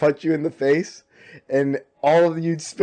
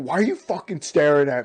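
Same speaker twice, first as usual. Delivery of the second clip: put-on snappy, defensive tone. Retelling how a stranger reacted to being stared at: imitating a defensive snap. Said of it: "Got real defensive".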